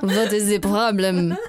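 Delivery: fake, put-on Russian accent. Speaker acts out what the other speaker could say after straight vodka, in a put-on Russian accent. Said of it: "put on a Russian accent".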